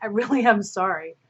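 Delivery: flippant, unserious, insincere apologetic tone. Trying to apologize seriously, but it comes out unserious: unserious apology. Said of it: "That wasn't serious".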